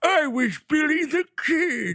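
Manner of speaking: put-on old man voice, high and slow. Imitating an actor playing Billy the Kid as an old man: Emilio Estevez old man voice. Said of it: "he's doing old man voice".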